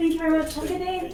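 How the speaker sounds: polite customer-service voice. Thanking the person delivering the pizza, in a customer service voice. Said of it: "Your customer service voice is quite something".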